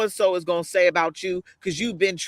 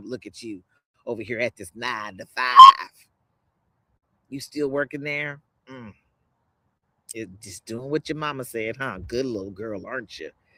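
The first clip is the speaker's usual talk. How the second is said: critical, taunting, mocking voice; 7 semitones lower than usual. Retelling how she used to beat herself up: imitating her critical inner voice. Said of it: "That critical voice".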